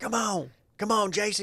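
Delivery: mock very high, drawn-out, pushy yelling. Imitating over-aggressive parents heard from the fields: imitating over-aggressive parents yelling. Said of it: "over-aggressive parents".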